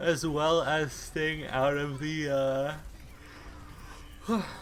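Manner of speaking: drawn-out words spoken mid-yawn. Discussing how hard Tracer is working, the speaker talks while yawning. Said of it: "sorry for yawning".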